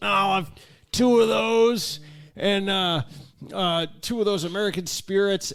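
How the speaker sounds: play-acted drunk voice, high-pitched and halting. Retelling a friend ordering cigarettes at the counter: imitating drunken speech. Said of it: "drunkenly goes".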